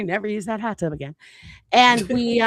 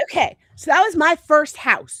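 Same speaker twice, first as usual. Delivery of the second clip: acted-out, mad and fed-up, pitched up; 6 semitones higher than usual. Retelling own testimony at sentencing, imitating own angry testimony. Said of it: "I was mad".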